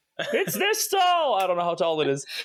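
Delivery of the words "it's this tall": high, swooping, in-character alarmed yell. Warning the party about a thing in the sky: yelling a warning in character. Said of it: "I am yelling out".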